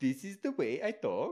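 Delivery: put-on high, cartoonish Norwegian accent. Retelling how the speaker always talks in the Norwegian guy from Frozen voice. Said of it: "I always use his voice".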